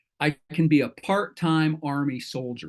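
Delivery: normal talking voice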